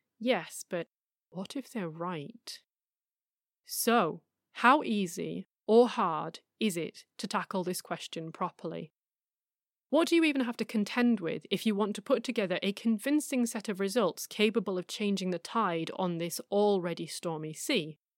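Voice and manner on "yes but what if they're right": soft, haunting, doubtful nagging whisper. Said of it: "little voice that haunts the pre-dawn hours and whispers".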